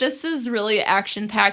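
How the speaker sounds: plain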